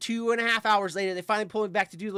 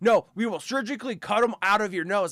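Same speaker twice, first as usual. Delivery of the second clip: put-on angry voice. Quoting a nurse in a story about her piercing, mock-angry nurse quote. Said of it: "She was like real mad about it too".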